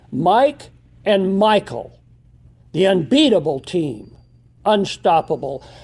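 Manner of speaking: booming, reverberating, echoing voice as if from above. Retelling words heard from the Lord: booming voice of the Lord. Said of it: "a booming voice of the Lord echoing".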